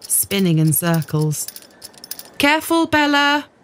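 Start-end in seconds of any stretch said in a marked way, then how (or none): 2.4-3.4 crying out, high and raised. Reading Mum calling to Bella as she spins on a chair, crying out. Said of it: "cried Mum".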